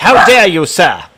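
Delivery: put-on indignant, affronted elderly British gentleman voice. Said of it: "an old British man being like".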